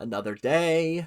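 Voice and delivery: bad, unconvincing American accent.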